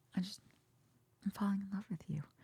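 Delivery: very hushed, shy, coy, soft under-breath murmur. Retelling one of the girls confessing to him: imitating a coy under-breath confession. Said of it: "she says it a little bit under her breath".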